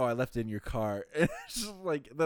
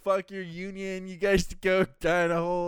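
play-acted, furious, ranting shout, loud and high; 5 semitones higher, 5 dB louder than usual. Retelling how Josh in a bathrobe yelled at trash collectors: imitating Josh yelling.

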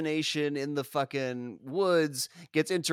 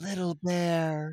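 mock sultry, sexual-sounding delivery. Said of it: "in a way that can only be described as sexual".

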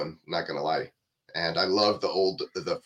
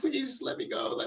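soft, hushed, whispery pleading tone; 5 dB quieter than usual. Describing a gross scene, speaker acts out the woman's line, acting out begging. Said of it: "like she's begging".

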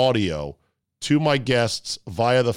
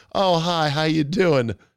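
mock sweet, friendly, high-pitched, slow delivery; 5 semitones higher than usual. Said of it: "she's real sweet".

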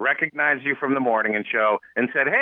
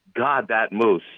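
put-on mutter under breath, lower; 4 semitones lower than usual. Retelling a remark made in the cucumber aisle: imitating muttering under breath. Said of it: "under my breath".

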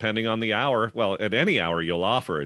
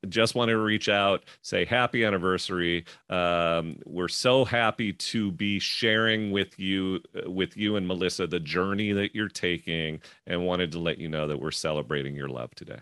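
normal talking voice

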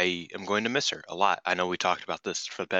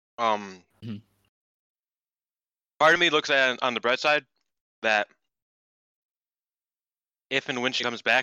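chewing while talking, higher and faster; 5 semitones higher, 3 dB louder than usual. Eating a Twix mid-conversation, the speaker keeps talking while chewing. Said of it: "sorry, I'm eating a Twix. It's very caramel-y, so, you know, hard to chew".

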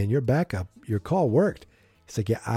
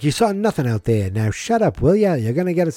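put-on old-timey period voice from the 1920s; 4 semitones higher, 5 dB louder than usual. Retelling what the boy in the car said, in an old-timey 1920s voice. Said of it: "like he's from the 1920s".

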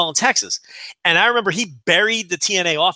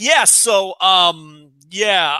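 put-on stammering speech. Retelling dead air in the interview: imitating stammering. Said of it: "one of us would stammer".

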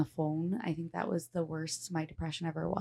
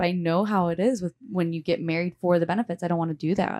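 usual speaking voice

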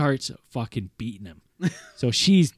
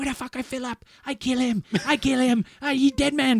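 mock shrill screeching rant, pitched way up; 11 semitones higher than usual. Retelling a phone call where Philip's wife threatens Philip: imitating someone screaming. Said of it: "screaming at me".

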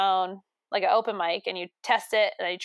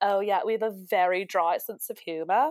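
put-on poorly done British accent. Imitating British people describing their humor: attempted British accent. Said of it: "not a British accent".

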